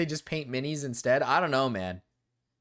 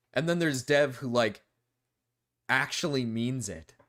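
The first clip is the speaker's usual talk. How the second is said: ordinary delivery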